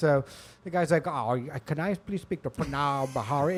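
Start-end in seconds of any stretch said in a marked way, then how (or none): 1.1-3.6 odd, weird, not-quite-American put-on accent. Retelling a call from a call-center caller, doing his weird accent. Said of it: "It's like a weird accent".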